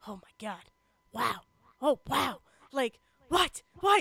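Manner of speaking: stunned, amazed, excited play-by-play commentary, rising. Retelling a game when the referee reacted to the score: imitating the referee's amazed commentary. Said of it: "I could just hear him being like".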